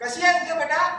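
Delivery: speaking very loudly. Greeting a daughter on the phone, talking very loudly on the phone. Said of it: "किती मोठ्याने बोलताय तुम्ही?".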